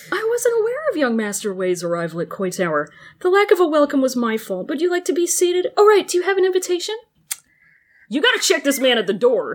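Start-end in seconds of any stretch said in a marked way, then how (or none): 0.1-7.0 very polite, courteous and gracious voice. Acting out a character's polite welcome at a banquet: voicing Jiggy, politely. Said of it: "And Jiggy is like".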